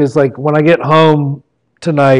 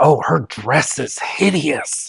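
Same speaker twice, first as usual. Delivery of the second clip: mock loud stage whisper, quieter and slower; 7 dB quieter than usual. Retelling what his wife whispers at weddings, imitating a loud whisper. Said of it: "she starts to whisper".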